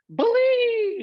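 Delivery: dramatic, high, loud, belted, drawn-out "believe".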